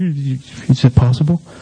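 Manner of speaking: slow, hushed, afraid, wondering tone. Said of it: "I was kind of afraid of it".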